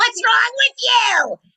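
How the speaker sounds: shrill yelling, very loud and high-pitched. Retelling a scene played as a frantic little girl: retelling a yell in character. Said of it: "And I'm yelling".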